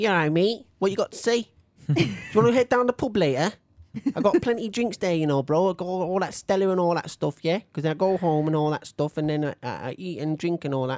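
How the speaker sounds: local Manchester accent. Showing how a local Manchester guy talks, in a local Manchester accent. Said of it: "a very kind of local Manchester dude".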